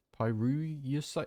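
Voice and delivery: pyrulusite with rising question tune.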